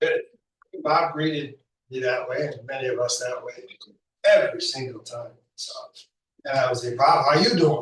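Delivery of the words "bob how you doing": put-on loud, raised voice with Boston accent. Greeting Bob by copying the way he talks, imitating Bob's Boston accent. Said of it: "And I do my Boston accent".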